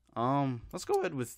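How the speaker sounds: voice cracking. Moving on to the next step when the voice cracks. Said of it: "my voice just cracked".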